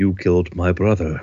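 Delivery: very deep, fast, menacing put-on British accent. Retelling what an opponent said after landing on the ropes, mock-menacing British accent. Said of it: "says in a very, very menacing British accent".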